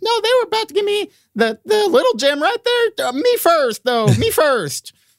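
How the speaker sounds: very high, tiny gnome-like voice. Voicing the little gate guard in a game scene, tiny half-orc gnome guard voice. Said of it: "The gate is manned by two guards, and they are both half-orc gnomes. And one of them is really big. Gnomes? And one of them is really small. / The little guard in front of you rolled a 6, so he's also".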